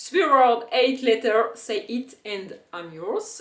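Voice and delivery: clumsy, deliberately bad English accent. Before translating a famous quote, the speaker says it in English with a bad accent. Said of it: "mon super accent".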